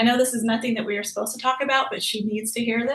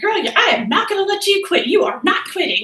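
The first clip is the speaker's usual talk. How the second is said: high, loud, folksy small-town country voice; 8 semitones higher, 7 dB louder than usual. Quoting the woman who taught the speaker persistence, in a little country voice. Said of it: "in that little country voice of hers".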